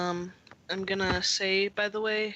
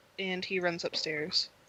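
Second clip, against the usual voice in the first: ordinary talk, nothing marked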